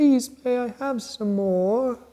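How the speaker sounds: very high, begging, pleading little voice. Acting out holding out a hand for a gift: pleading like Oliver Twist. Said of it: "You're like Oliver Twist".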